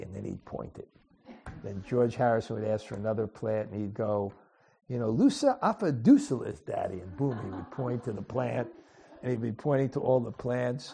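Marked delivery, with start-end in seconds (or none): 4.9-7.0 animated, put-on, sing-song New York accent. Retelling a man's answer when asked for another plant, in a new york accent. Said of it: "in his New York accent".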